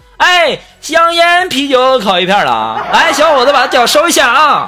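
put-on play-acted high old woman voice, calling out. Retelling a joke where an old lady on a bus plays a train vendor: imitating an old lady shouting at the top of her voice. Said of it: "老太太扯着嗓子就喊了一句".

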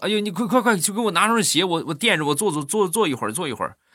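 frantic, desperate, high-pitched stammering delivery.

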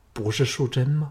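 ordinary delivery, nothing marked

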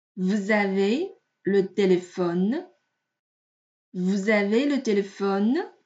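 rising question tune on vous avez le téléphone. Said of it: "所以我们读成声调的".

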